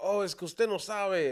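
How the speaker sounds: high Spanish call-out. Retelling a plant seller at a flea market: imitating someone yelling in spanish. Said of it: "fucking yelling in Spanish".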